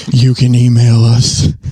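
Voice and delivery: slow, loud mock sultry voice.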